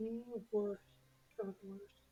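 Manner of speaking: speaking very quietly. Voicing a character muttering as a captive is taken away: said really softly. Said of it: "say really softly".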